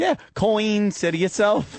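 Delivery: very high, amateur English accent attempt. Retelling a friend's attempt at an English accent: Marissa's put-on English accent. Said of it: "her idea of an English accent".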